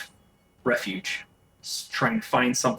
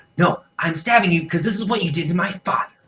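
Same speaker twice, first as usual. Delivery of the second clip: put-on high, loud little boy voice; 6 semitones higher, 5 dB louder than usual. In a tabletop game, the narrator voices a boy answering a player, in a little boy voice. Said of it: "You hear the little boy go".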